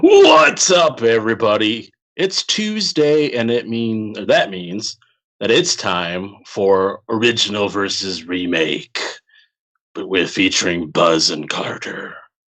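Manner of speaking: eerie put-on creepy voice, very slow, drawn out. Host opening the tuesday show in a creepy voice. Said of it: "I don't know why I'm doing creepy voice".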